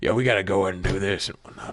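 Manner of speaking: low gruff voice. Retelling how another player sounded in a game session: imitating a gruff-voiced player. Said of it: "he sounded like a really gruff type of character".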